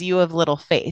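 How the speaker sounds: ordinary delivery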